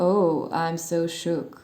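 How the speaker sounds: very slow, unimpressed, sarcastic drawl. Showing how someone unimpressed might answer a shock attempt: sarcastic. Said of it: "as if you would say that to someone in a sarcastic way".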